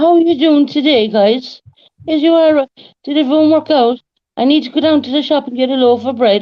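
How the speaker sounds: put-on Cork accent, spoken high. Speaker shows how a friend's accent sounds: imitating Eileen's Cork accent. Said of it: "Eileen's accent is more like".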